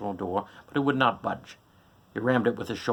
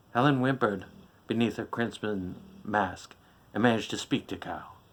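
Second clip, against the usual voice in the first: ordinary delivery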